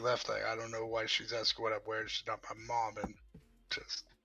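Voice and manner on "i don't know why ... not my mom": barely audible, quiet muttering under the breath. Player voicing their character, who follows behind her: mumbling under breath. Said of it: "I just mumble".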